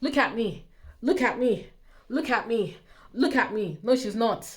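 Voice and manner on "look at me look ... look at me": slow, mock vain, attention-seeking show-off voice. Mocking how an article portrays someone as always posing: mocking attention-seeker. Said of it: "making it sound like as if Meghan is out every day posing".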